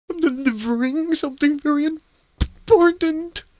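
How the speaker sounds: very high, terrified, teeth-rattling trembling voice. Pressed about what he was doing, he answers in a terrified, teeth-rattling shake. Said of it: "his teeth rattling in his jaw".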